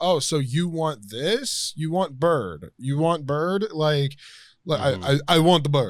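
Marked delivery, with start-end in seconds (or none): 0.0-3.7 put-on, mimicked, much slower speech. Retelling how a character talks to Whiplash like a baby, imitating slow speech. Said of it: "he speaks really slow to him".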